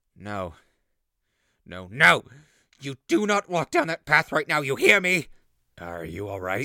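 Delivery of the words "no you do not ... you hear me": full-volume screaming, very loud. Telling how they joined the Dashwoods, suddenly breaking off screaming. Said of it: "Stop screaming!".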